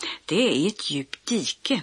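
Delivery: plain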